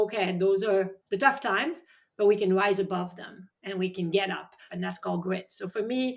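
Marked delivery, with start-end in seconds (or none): none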